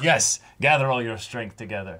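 ordinary talk, nothing marked

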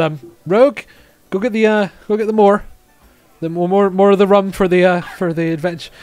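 loud, high, called-out shouting. Voicing a character calling to rogue to fetch more rum: shouting round a corner. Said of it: "he shouts round the corner".

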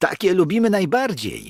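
thrilled, excited, high swooping exclamation. Szoruś reacts to pani Wiewiórka's warning of a scary story with an excited exclamation. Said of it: "Wykrzyknął rozemocjonowany Szoruś".

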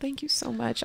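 acted weeping, words spoken through tears. Retelling holding her daughter in China, imitating own past crying. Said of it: "I cried and cried and go".

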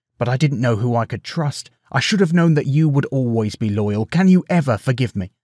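ordinary delivery

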